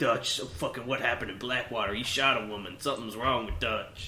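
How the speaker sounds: griping, complaining character voice. Mimicking how Arthur talks around Dutch: Arthur voice. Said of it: "But around everyone else, he's like".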